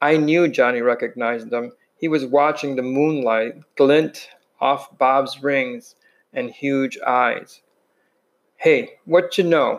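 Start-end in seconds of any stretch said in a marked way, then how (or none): 8.6-9.8 unsteady voice, higher pitch. A youth confronts two boys from another gang at night, speaking unsteadily. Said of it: "Bob said in a little unsteadily".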